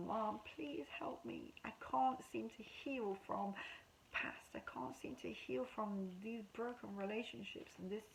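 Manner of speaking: put-on, high, desperate begging cry. Retelling how they begged their mom at her grave, reenacting the begging. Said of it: "begging her".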